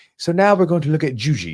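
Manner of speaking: put-on proper British accent. Quoting a seminar instructor introducing a technique: Neil Adams British accent. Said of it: "he has a very proper British accent".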